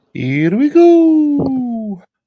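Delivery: very high, very loud, belted cartoon Italian accent, stretched "go". Checking how far off he is, the speaker announces this in a Mario impression. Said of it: "Was that a Mario impression?".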